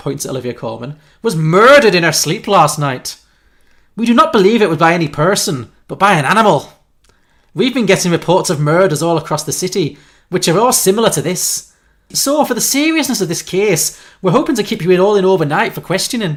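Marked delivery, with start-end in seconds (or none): 1.2-16.4 put-on strong Irish accent, higher and louder. Voicing a police officer's lines in a made-up story: broad Irish accent. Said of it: "with his broad Irish accent".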